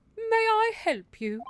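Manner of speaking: drawn-out, very high, slow put-on maid voice. Voicing the maid who answers the door: put-on voice for the maid. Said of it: "I like this voice for her".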